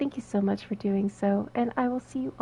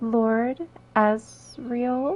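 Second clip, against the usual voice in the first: very slow, deliberate, careful pronunciation. Thanking a viewer for following, the streamer says the name really slowly. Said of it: "I know I said that really slowly".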